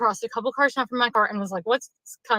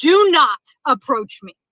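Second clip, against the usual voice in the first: put-on forceful, loud, slow, firm yell; 3 semitones higher, 5 dB louder than usual. Retelling a parking lot encounter: retelling a yell. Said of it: "I literally yelled at him and I said".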